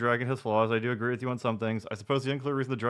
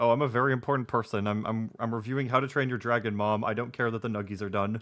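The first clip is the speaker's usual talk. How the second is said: normal talking voice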